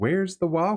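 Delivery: put-on Southern twang. Retelling a voice heard on a recording, imitating a southern twang. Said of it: "the Southern twang to it".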